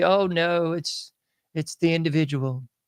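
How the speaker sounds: normal talking voice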